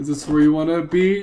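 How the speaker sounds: ordinary delivery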